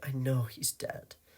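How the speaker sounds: whispering. A woman, just offered coffee by Vetter, whispering. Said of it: "she whispered".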